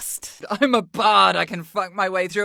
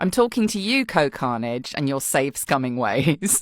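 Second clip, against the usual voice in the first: plain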